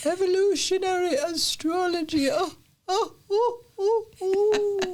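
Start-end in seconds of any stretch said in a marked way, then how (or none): 0.0-2.3 put-on English accent. After stumbling over a term, trying the phrase in an English accent. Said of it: "Try saying it in an English accent".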